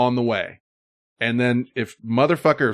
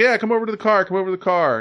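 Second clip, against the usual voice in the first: play-acted high, goading, egging-on jeer; 9 semitones higher than usual. Retelling how a man in a car goaded a woman: imitating a goading taunt. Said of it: "the guy goads Dee Dee on".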